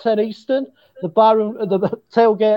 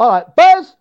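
squeaky, high-pitched little cheering shout; 2 semitones higher, 5 dB louder than usual. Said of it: "like in a high pitch".

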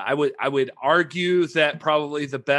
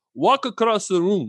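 very bad put-on Italian accent, broken English, pitched up; 5 semitones higher than usual. Retelling what an Italian director told them, in a very bad Italian accent. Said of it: "I'm going to do a very bad Italian impersonation".

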